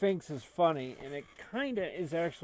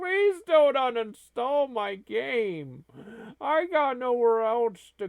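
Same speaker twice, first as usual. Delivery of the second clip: very loud, high, wailing, pleading, stretched-out crying; 8 semitones higher, 9 dB louder than usual. Retelling a game's uninstall screen to Glenn, imitating Mister Kitty crying. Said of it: "and he's crying".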